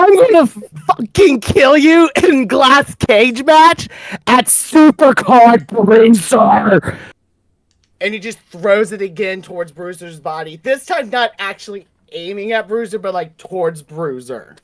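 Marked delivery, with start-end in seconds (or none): 0.0-7.0 loud, all-out, drawn-out screaming. Voicing a wrestler who grabs the microphone amid chaos: screaming in character. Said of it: "he is screaming".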